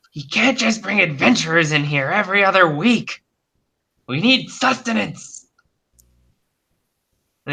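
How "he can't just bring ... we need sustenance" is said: high-pitched, strange hungry monster voice. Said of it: "one of them saying".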